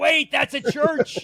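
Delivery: high, slow eight-bit cartoon character exclamation.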